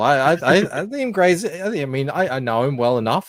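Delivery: slow, halting stammer with repeated false starts. Answering a question about whether he hates someone: stammering. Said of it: "A lot of stammering there".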